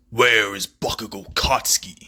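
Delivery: weird, machine-modulated-sounding voice. Voicing a masked figure with a voice modulator: voice-modulated Deku voice. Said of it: "That's basically what it sounds like".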